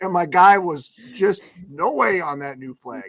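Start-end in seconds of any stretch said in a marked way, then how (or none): 1.7-3.1 put-on, strongly convinced, firm tone. Retelling what a man said about the new flag: imitating someone's strong conviction. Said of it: "he had that conviction in his voice".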